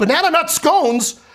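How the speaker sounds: outraged yell, high and loud. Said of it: "I stand up on a table and I shout".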